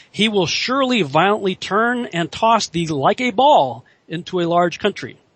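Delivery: normal talking voice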